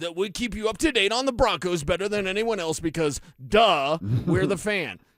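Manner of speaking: grand radio-promo announcer voice. Acting out a promo for a Broncos show, big promo voice. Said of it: "back to the big voice of like".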